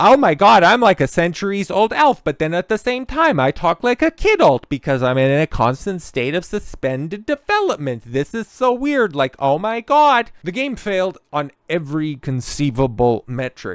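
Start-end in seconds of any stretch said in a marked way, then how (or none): 0.0-10.3 put-on, high, loud quirky girl character voice. Speaker imitates a game's centuries-old elf character; quirky girl voice. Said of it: "I got the quirky girl voice".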